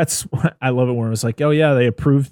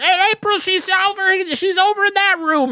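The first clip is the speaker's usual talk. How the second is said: put-on yell in a much higher pitch. Recapping a scene where Drew finally finds April, retelling Drew's yell. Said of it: "just yells".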